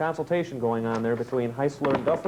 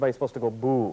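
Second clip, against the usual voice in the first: ordinary talk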